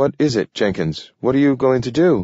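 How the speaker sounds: sudden edge of fear. Joshua asks Jenkins what he plans to do, with a sudden edge of fear. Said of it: "Joshua's voice had a sudden edge of fear".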